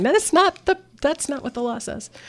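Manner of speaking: very high-pitched, shrill shouted protest. Retelling shouting at a computer about the law: retelling own shouting. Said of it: "shouting at my computer going".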